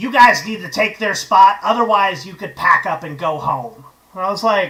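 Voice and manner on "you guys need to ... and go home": gravelly cigarette-smoker voice. Retelling what the venue owner told the band, in a cigarette voice. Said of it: "cigarette voice".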